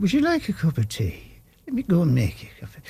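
put-on Irish accent. Retelling offering tea during a break from an Irish show, Irish accent. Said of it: "I'll have this Irish thing in my head".

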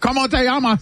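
Spanish spoken with an Osaka Japanese accent. Acting out a family member greeting over FaceTime: Spanish with Japanese accent. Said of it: "Why do you say it like you're from Osaka?".

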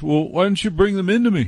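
high, coaxing, beckoning call.

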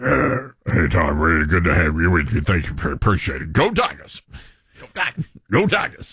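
deep imitated Louisiana accent. Recalling coach Ed Orgeron greeting Tom: Ed Orgeron accent impression. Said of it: "That's a pretty good accent".

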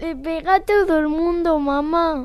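slow, weepy, tearful voice, speaking through crying. A daughter answers her mother's questions about being hit, crying. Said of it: "¿Por qué lloras?".

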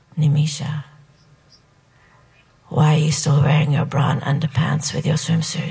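put-on whisper. Retelling what the boy whose party it is said: imitating someone whispering. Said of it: "he whispers in my ear".

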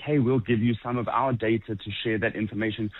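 plain

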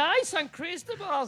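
high, slow, drawn-out teasing tone.

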